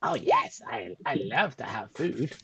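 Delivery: animated, swooping little rat voice. Voicing a rat that a player asks to speak telepathically: talking rat voice. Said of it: "a rat would do".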